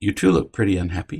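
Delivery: gentle, calm tone with no accusing edge. Showing how to enter the room: calm, non-accusing tone. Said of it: "did you hear my tone? There's no accusation, no stopping, no criticism".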